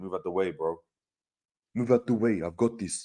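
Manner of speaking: put-on Dutch accent. Imagining a last-minute free kick: Virgil van Dijk telling teammates to move. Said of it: "Speak with a Dutch accent".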